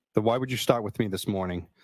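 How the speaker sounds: usual speaking voice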